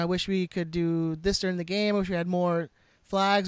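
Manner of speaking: plain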